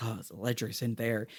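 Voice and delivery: secretive, hushed, soft half-whisper. Recapping a scene where Pete secretly passes a key to Josie, half-whispering as Pete. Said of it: "he whispers like".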